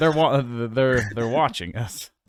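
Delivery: ordinary delivery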